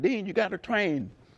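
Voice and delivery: acted-out, very high, hollering coach voice. Retelling how a coach always yelled at him: imitating a yelling coach. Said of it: "my coach was always yelling at me".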